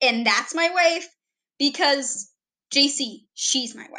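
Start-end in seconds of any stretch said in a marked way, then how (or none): 0.3-1.1 stress on "that's", said possessively. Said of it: "There's a difference between".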